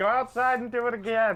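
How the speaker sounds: shouting from outside. Playing a character who calls from outside to do it again: yelling from outside. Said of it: "I yell from outside".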